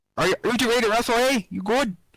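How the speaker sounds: put-on Canadian accent. Asking the other players if they're ready to wrestle, talking Canadian. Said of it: "Stop talking Canadian".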